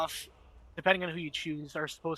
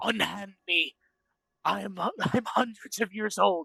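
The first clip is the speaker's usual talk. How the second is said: put-on talking cat voice; 2 semitones higher than usual. Acting out a Khajiit answering the player: voicing a Khajiit cat. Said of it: "he just looks at you like".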